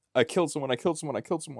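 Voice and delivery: high, fast, tearful, almost crying. Telling a story about a serial killer calling the cops, imitating him crying. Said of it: "He would be crying and like on the verge of tears".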